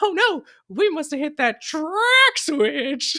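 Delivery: very high, loud, swooping mouse squeak. Quoting how another voice actor does Mickey saying something ordinary: Mickey voice. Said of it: "the way that he does Mickey".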